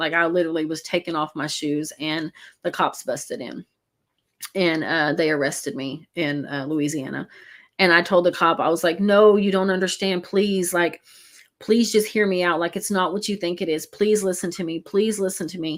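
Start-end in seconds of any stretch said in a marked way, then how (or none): 9.0-15.8 put-on pleading cry-out. Speaker retells pleading with a police officer during the arrest: retelling crying out for help. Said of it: "I was trying to cry out".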